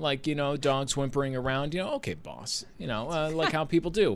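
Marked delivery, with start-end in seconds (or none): 1.9-2.6 low, soft, condescending voice. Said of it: "kind of condescendingly".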